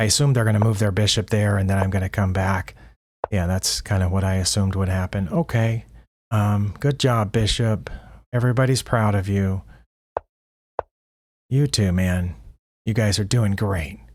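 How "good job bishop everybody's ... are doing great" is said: slow, sarcastic, mocking tone. Speaking to their own chess pieces after simple moves, sarcastic mock praise. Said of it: "I was being a little sarcastic there".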